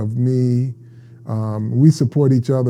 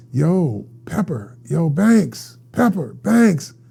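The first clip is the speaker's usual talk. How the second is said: mock starstruck screaming, pitched high; 5 semitones higher than usual. Telling of hearing someone behind them call out, imitating someone screaming. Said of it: "I hear somebody screaming".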